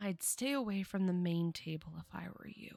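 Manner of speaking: hushed whisper. Voicing a dancer who steps closer to warn a player: whispering. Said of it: "kind of whispers to you".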